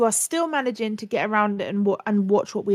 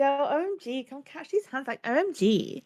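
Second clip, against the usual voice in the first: sarcastic, high, mocking gushing chatter voice; 4 semitones higher, 6 dB quieter than usual. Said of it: "the same way that she says".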